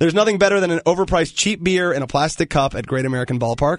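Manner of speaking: normal talking voice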